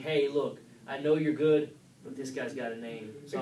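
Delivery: normal talking voice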